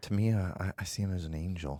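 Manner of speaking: soft-spoken, understated, hushed, barely above a breath. Retelling a phone call with an actor, soft-spoken Tom Noonan voice. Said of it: "he's very soft-spoken, and he talks like this".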